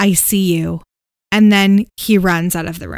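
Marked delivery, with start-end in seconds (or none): 0.0-0.8 menacing, evil-sounding, demonic voice. Retelling what Matt heard before leaving the room, in a demonic voice. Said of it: "in a really demonic tone say".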